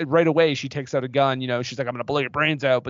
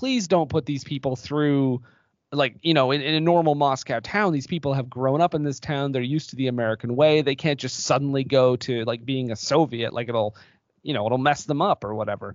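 ordinary talk

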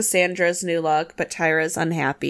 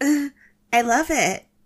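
hollow, fake delight, high, slow, forced enthusiasm; 8 semitones higher than usual. Retelling a judging scene, imitating Tyra's dead-eyed forced "I love it". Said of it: "Tyra smiles, like, dead in the eyes and goes".

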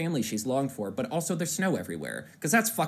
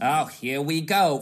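very slow, loud, drawn-out put-on New York accent; 6 dB louder than usual. Imitating a movie bat's constant line: imitating a bat's New Yorker accent. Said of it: "he sounds like a New Yorker".

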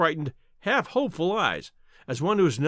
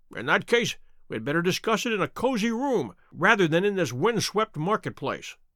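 ordinary delivery

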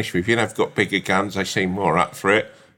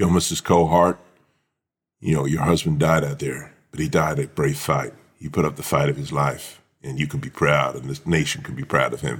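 deep put-on American accent; 6 semitones lower than usual. Parodying war-film scenes of a messenger at a wife's door: American accent. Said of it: "put an American accent on".

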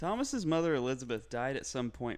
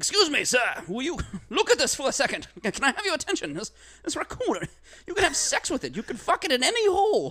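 very high, shrill, very loud hawker-style calling; 13 semitones higher, 11 dB louder than usual. Acting out Bartholomew approaching strangers on the street: imitating Bartholomew pitching to strangers. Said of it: "walking up to strangers on the street with a stuffed raccoon, and he's like".

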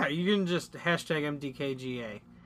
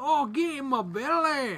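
gross fat-brute character impression, pitched up; 9 semitones higher than usual. Prompted by the other speaker, the speaker tries a Fat Bastard impression. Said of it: "fat bastard impressions".

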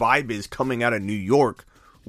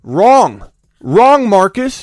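high, very loud, all-out full-volume yell; 8 semitones higher, 12 dB louder than usual. Answering a caller's advice; yelling. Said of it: "So I'm sorry I yelled at you".

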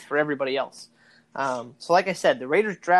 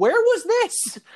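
squeaky, high-pitched, disbelieving tone; 14 semitones higher, 3 dB louder than usual. Recalling his dad turning to him mid-game, imitating dad's high-pitched voice. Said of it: "in a high-pitched voice".

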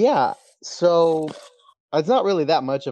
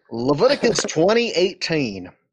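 louder, booming Southern preacher voice. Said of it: "let me get my Southern preacher voice on".

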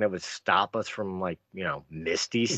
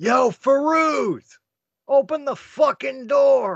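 really loud, very high, very slow, drawn-out yell; 7 dB louder than usual. Calling to a captain behind the city wall: yelling really loud. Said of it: "I can yell really loud".

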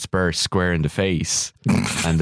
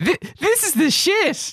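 put-on excited little girl voice, much higher pitch. Retelling a little girl behind them before a show, imitating an excited little girl. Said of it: "jumping up and down and really excited".

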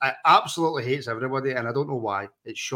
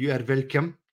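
put-on French accent; 3 dB quieter than usual. Answering a thank-you as a joke: put-on French accent. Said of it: "that's my best French accent".

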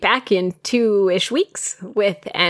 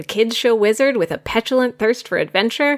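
normal talking voice

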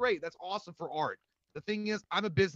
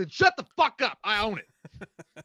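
very loud, slow, word-by-word heroic movie-style bellow; 4 semitones higher, 9 dB louder than usual. Acting out what they'd say to a complainer, sounding like Samuel L. Jackson. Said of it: "You sounded like Samuel Jackson in Dire with a Vengeance".

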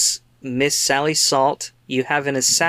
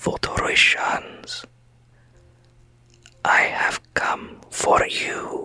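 slow, drawn-out, breathy whisper. Voicing a voice heard in the back of a character's mind: whispering voice. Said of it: "you hear sort of a whisper".

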